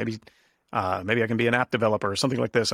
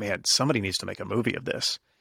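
imitated muttering under breath. Retelling words once said while reading Psalms: imitating muttering under breath. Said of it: "I said under my breath".

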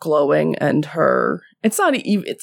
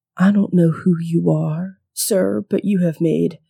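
whispered character voice. Voicing Tammy Jo casting a magic trap on an unknown man, whispering. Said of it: "she just whispers".

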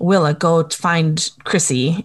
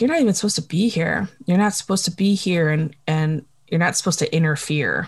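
ordinary delivery

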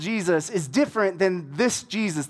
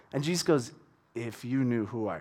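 ordinary talk, nothing marked

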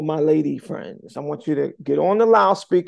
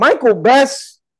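stern, firm, raised call, each word firm; 8 semitones higher, 8 dB louder than usual. Retelling how he was called to the office: imitating a firm call. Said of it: "The firmness in his voice".

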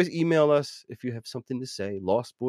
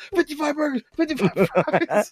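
put-on yell, much higher pitch. Retelling what the lady at the end yelled, retelling a yell. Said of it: "She's yelling".

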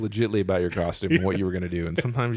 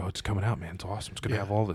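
put-on excited, gushing fan voice, quieter; 6 dB quieter than usual. Retelling how Rick geeked out over a release: imitating Rick geeking out. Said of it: "geeking out".

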